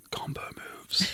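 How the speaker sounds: very soft whispered aside. Giving a sly grin to Nero while climbing: whispering. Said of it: "and I just whisper".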